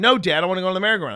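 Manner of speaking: put-on five-year-old's high, loud tantrum scream. Father retelling his five-year-old daughter's tantrum, imitating a screaming child. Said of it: "And she is screaming".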